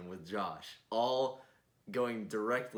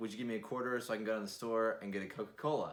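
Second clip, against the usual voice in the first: ordinary talk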